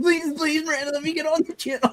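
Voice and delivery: very high, desperate, pleading voice. Retelling asking every week to come on the channel: imitating own begging. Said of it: "me begging, like, every week".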